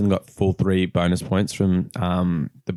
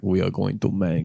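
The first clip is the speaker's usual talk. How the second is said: clumsy, bad, put-on Russian accent. Joking about what the Russians said, in a bad Russian accent. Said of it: "that's not a good Russian accent".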